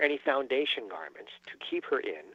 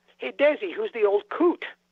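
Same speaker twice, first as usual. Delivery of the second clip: mock loudish, carrying call-out, pitched up; 8 semitones higher, 5 dB louder than usual. Retelling Vivian Vance's remark at a first reading: imitating her speaking loudly. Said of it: "in a loudish voice".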